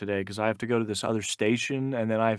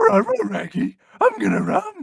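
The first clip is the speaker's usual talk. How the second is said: very high, swooping, drawn-out cartoon dog voice; 7 dB louder than usual. Repeating a joke line as Scooby-Doo: Scooby-Doo voice. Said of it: "the actual line was that Scooby-Doo".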